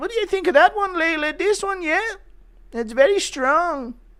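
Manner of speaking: put-on very high-pitched, weak, feeble Irish accent. Imitating Ian Garry showing Layla the pick, asking yes or no: weak Irish voice. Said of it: "my typical weak bitch Irish voice".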